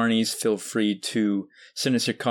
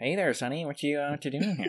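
creeping, stalking voice; 4 semitones higher, 6 dB quieter than usual. Playing the prowler on the grounds right after he is mentioned: George Lucas prowling voice. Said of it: "He might be prowling the grounds".

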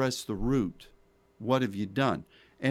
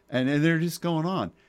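ordinary delivery

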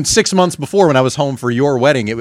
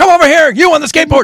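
put-on yelling old man voice, higher and louder; 6 dB louder than usual. Imitating Doc Brown calling to Marty: imitating Doc Brown yelling. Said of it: "Can you stop yelling?".

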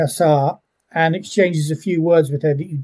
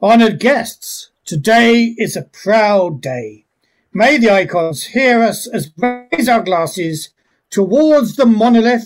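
high, grand, formal ceremonial delivery; 5 semitones higher, 4 dB louder than usual. Game master voicing the host toasting honoured guests, in a formal ceremonial toast. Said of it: "Honoured guests and friends, I welcome you with all my heart to the [name]. Tonight we celebrate the union of the [name] and the noble [name]".

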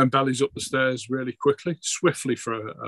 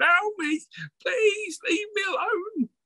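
panicked, terrified, very high shrieking scream. Voicing a frightened man backed into a corner: yelling and screaming in fear. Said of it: "he's just yelling and screaming".

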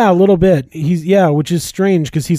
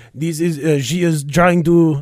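put-on French accent; 3 dB quieter than usual. Speaker retelling a scene, quoting a man, in mock French accent. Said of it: "I'm getting a little French here".

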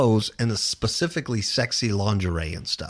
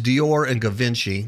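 normal talking voice

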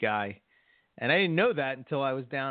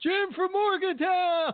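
mock shout, higher pitch. Retelling shouting out while driving past a town: retelling a yell. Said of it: "I yell out".

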